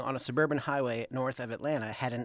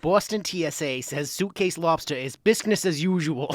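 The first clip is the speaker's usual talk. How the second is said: loud Bostonian accent; 3 semitones higher, 8 dB louder than usual. Reading the last headline aloud to the co-host, in a Boston accent. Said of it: "all of these should be read with a Boston accent".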